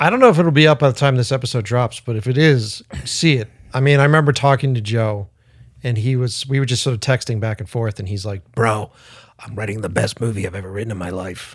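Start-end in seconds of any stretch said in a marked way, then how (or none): 8.5-11.5 low-key bro voice impression. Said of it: "your impression of him".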